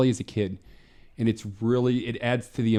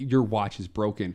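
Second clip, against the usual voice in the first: usual speaking voice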